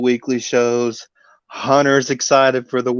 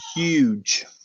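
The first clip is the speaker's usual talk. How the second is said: huge drawn out with heavy, exaggerated stress; 3 semitones higher, 5 dB quieter than usual. Hyping a show's match card: Donald Trump-style 'huge'. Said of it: "Like like the way Donald Trump puts emphasis on huge".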